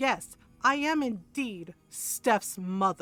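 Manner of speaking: very slow, firm and deliberate. Retelling a confrontation on a phone call: retelling speaking firmly. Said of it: "And I got firm with her".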